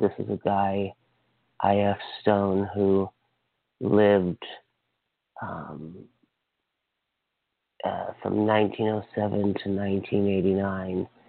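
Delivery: unhurried speech. Introducing i.f. stone to listeners, talking slowly. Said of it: "I'm just talking slow".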